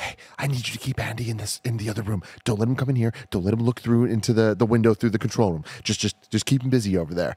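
acted-out loud whisper. Retelling what a man said as he walked up beside them: retelling a loud whisper. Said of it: "like in that like loud whisper type voice".

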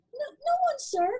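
terrified, very high little voice. Answering a thundering voice that demands a repeat, very frightened. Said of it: "very frightened by now".

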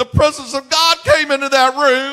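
mock, very high, very loud, pumped-up excited cry. Retelling an old woman's story of praising God: imitating excited speech. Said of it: "She got all excited and all".

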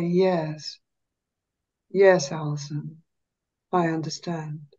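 low, slow, dropped voice, very precise. Speaker showing how they must talk to allison, low and slow voice. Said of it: "I have to drop my voice and go slow and low".

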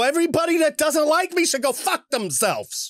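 put-on New York accent, high pitch. Trying the Portnoy quote again: Portnoy impression mixed with Pesci. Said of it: "That was more like mix of Pesci".

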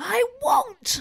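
very high, piercing yell. Retelling the scene where Harry refuses: imitating Harry yelling. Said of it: "he yells".

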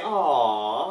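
mock-sweet, sarcastic, drawn-out aww. Showing the sound you make at a pet slug: sarcastic aww. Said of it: "you're all sarcastic".

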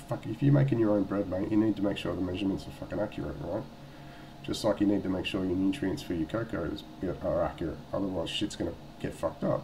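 usual speaking voice

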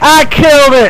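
high, loud, triumphant victory whoop.

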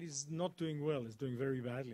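plain

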